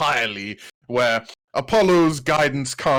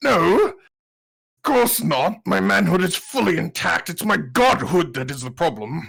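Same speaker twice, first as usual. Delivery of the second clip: furious, angry retort, pitched up; 5 semitones higher than usual. Storyteller voicing a character who looks up at her, angry retort. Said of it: "He looks up at her very angrily".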